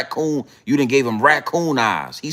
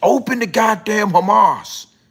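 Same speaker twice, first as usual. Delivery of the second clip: put-on, high-pitched screaming; 8 semitones higher than usual. You tell listeners what Donald Trump is doing, imitating Donald Trump screaming. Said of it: "He he he he's screaming".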